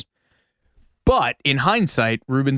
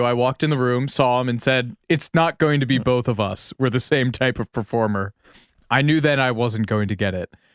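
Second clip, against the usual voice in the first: usual speaking voice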